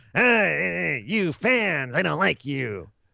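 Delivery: slow, creaky, rough voice, every eh drawn out. Imitating how a wrestler sounded, in a Gilbert Gottfried-like voice. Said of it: "He sounded like a Gilbert Gottfried kind of thing".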